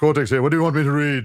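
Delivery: high, loud cartoon-villain voice. Showing the warm-up phrase used to get into a character: Neo Cortex voice. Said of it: "I'll do that before I start doing".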